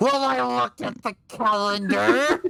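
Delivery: pointed, combative, aggressive, slow and deliberate. Retelling a coworker's reply about the calendar: imitating someone getting aggressive. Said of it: "she gets all aggressive".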